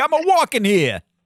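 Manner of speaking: put-on thick New York Brooklyn accent. Discussing a movie character's accent, the speaker imitates him: thick Brooklyn accent. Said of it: "triple scoop of New York, Brooklyn accent".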